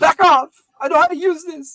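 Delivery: shrill, very high, very loud female voice. Game master voicing a woman in a closet pointing a sword at the players, female voice. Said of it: "Female voice".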